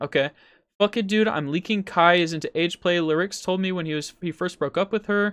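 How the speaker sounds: ordinary talk, nothing marked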